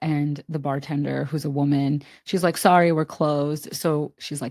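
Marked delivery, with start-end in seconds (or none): none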